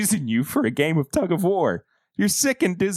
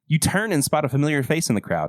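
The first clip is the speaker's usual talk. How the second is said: ordinary delivery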